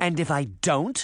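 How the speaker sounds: ordinary delivery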